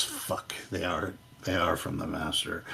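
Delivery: very hushed, quiet mumble under the breath. Narrating to the group, voice a man seeing them in temple finery, muttering to himself. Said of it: "he kind of mutters to himself and says".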